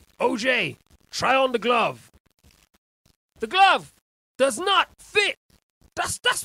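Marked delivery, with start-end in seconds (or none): 1.1-5.4 loud, high, mock proclaiming voice. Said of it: "You know what this reminds me of? O J".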